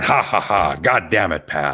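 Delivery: put-on laughing voice. Imagining Vince McMahon at a comedy show: Vince McMahon laughing. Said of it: "he's probably laughing, going".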